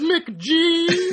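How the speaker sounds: British voice, very high, laughing. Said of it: "Here's how he normally sounds".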